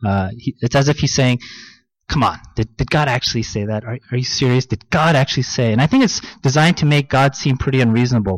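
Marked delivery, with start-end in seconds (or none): none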